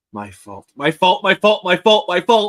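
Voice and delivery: breaking into laughter. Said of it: "I'm already breaking".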